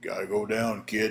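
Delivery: super deep growled voice, as low as possible. Retelling what Nelson said while holding the speaker: Nelson's super deep voice. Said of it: "in that super deep voice Nelson had".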